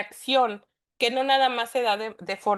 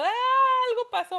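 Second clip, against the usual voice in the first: high, panicked yelling cry. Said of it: "todos los niños por todos lados gritando".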